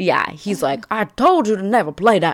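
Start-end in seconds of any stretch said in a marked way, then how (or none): 0.9-2.4 put-on Southern accent, pitched up. Recapping the scene where Rick storms out of his office, Rick in a Southern accent. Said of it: "I don't know why he's Southern".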